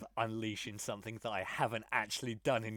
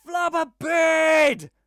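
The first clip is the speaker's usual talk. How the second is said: shrieking, high-pitched, full-volume shrill yell; 18 dB louder than usual. Playing a soaked, frustrated character who yells at the scene: yelling in character. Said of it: "And I just yell".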